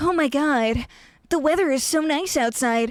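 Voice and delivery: cartoonish anime-style character voice. Retelling a guy who would talk in an anime voice, anime voice. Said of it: "an anime voice, and he'd be like".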